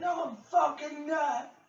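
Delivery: high-pitched, shrill, top-of-the-lungs screaming. Retelling how Josh screamed at the top of his lungs, imitating Josh screaming. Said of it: "Josh was screaming at the top of his lungs".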